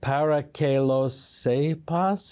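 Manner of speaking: very slow Spanish with a touch of Italian accent. Host introducing a guest's weekly segment says its Spanish title: Spanish with slight Italian accent. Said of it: "with a little bit of an Italian accent".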